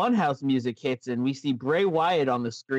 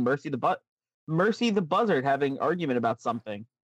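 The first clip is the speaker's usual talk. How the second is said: ordinary talk, nothing marked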